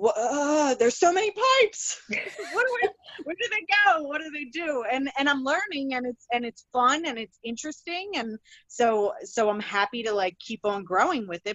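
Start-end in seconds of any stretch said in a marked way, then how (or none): 0.0-4.8 high, fast, laughing, flustered panic blurted out. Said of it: "I'm like".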